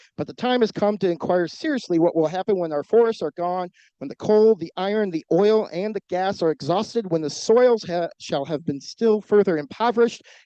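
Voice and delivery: breakneck, rushed, hurtling delivery. A speaker closing public remarks reads a Theodore Roosevelt quote: reading as fast as possible. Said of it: "I'll try and read it as fast as I can".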